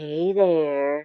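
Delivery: mock-saucy little put-on voice. Describing what the moon figure is doing, voicing her saucy little greeting. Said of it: "She's doing her saucy little like".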